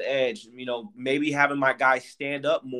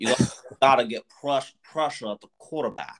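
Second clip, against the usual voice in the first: put-on New York or Jersey accent. Quoting how someone talks about pressure, in a put-on new york or jersey accent. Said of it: "say it like in his New York or his Jersey accent".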